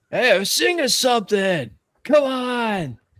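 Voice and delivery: very high, rowdy heckling shout, "on" drawn out. Voicing two bikers in the story shouting at Red, shouting. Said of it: "two bikers start shouting at Red".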